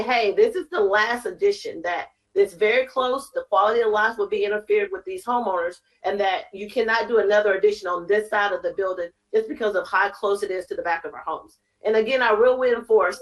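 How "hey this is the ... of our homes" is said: plain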